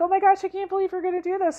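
high, rushed, thrilled, gushing disbelief. Retelling an uncle's reaction to bungee jumping plans: imitating excited uncle. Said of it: "he was so excited".

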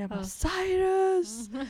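play-acted, high, long drawn-out yelled scream. Retelling how she sat down on the toilet and screamed for him, retelling a scream. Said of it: "så började jag skrika".

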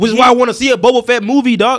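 very high-pitched, loud yelling. Arguing for a boba fett movie with another speaker: yelling. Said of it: "I'm yelling".

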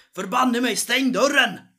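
very loud angry shout. Narrator voices the man behind the bar yelling at Urg, as a shouting innkeeper. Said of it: "och så skriker han".

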